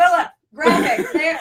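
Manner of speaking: barked, loud, yelling delivery. Joking about needing a graphics editor to scream at: screaming orders at someone. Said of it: "we need somebody we can scream at".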